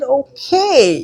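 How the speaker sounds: high, wide, excited okay.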